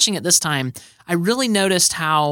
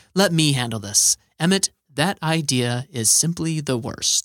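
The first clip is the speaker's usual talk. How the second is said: smooth, velvety voice; 3 semitones lower than usual. Quoting a movie line, praising the actor's voice: velvety Morgan Freeman voice. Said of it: "Morgan Freeman's velvety voice".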